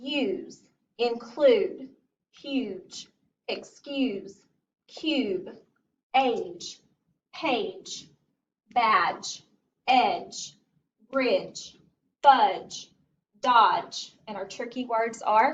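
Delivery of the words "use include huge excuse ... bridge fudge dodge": slow, deliberate reading, one word at a time. Leading listeners through a word list, starting with slow tractor reading. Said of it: "starting with tractor reading".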